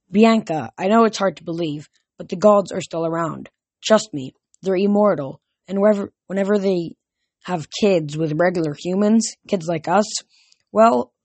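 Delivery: ordinary delivery, nothing marked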